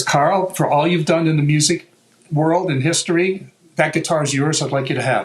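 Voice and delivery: ordinary talk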